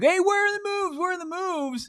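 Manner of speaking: mock panic, high-pitched and frantic. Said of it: "I'll look like I'm panicking".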